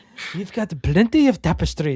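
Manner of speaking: put-on Irish accent. Quoting a line from Indiana Jones three: imitating an Irish accent. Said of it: "he's got his Irish accent".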